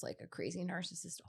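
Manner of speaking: soft, hushed, secretive whisper.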